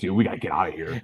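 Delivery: low, hushed half-whisper. Quoting what he half-whispered to you at the time, retelling a half-whisper. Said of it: "he whispers me".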